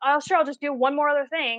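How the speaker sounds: irritable, upset, snappy retort. Retelling how a best friend answered a request: imitating someone snapping. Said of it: "snapped at me".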